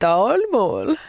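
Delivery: bad Dalarna accent attempt, voice unlike the speaker's own.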